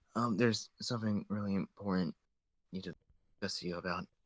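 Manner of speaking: soft, discreet, confidential lean-in tone. Leaning over a desk to raise something important: quiet and discreet. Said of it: "just say quietly and discreetly".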